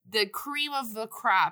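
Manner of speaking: normal talking voice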